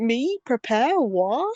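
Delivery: dry, sarcastic, teasing, acted tone. Imitating the other speaker's reply about preparing: imitating a sarcastic tone. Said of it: "That sounded really sarcastic on your end".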